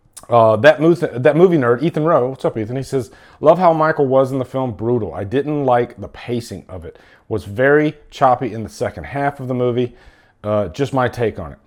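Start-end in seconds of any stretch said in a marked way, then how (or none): none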